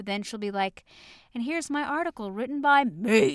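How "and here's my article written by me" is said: sudden high cartoonish dog voice. Imitating someone suddenly switching from soft-spoken to a Goofy voice. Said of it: "You just did a Goofy voice".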